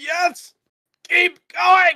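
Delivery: hissed out through pain. In a roleplay, a stabbed character answers while screaming in agony: hissed out through pain. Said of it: "managing to hiss out".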